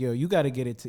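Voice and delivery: plain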